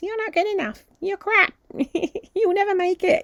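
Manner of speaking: squeaky, very high, tiny little voice. Demonstrating the inner critic voice called Cecil, in a little Mickey Mouse voice. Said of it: "like this little Mickey Mouse".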